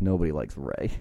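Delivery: muttered, under the breath. Recounting a wrestling broadcast and quoting what he said: muttering. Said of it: "and he just mutters".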